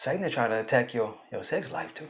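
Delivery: quiet, hushed whisper kept under the breath. Speaking to married couples in the audience, whispering. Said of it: "I whispered when I said that".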